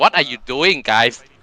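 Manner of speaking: acted-out, mock yelling. A coach telling how they react to the team's mistakes, retelling yelling at the team. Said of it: "I gonna yelling to them also like".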